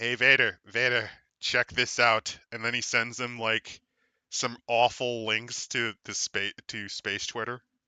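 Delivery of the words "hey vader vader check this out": scheming, dark villain voice. Imagining a ruler showing Vader something online: Emperor Palpatine voice. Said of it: "envisioning now Emperor Palpatine going".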